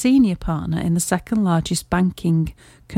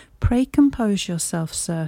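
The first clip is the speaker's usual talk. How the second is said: ordinary delivery, nothing marked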